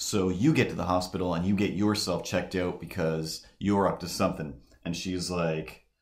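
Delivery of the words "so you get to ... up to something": normal talking voice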